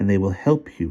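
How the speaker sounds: plain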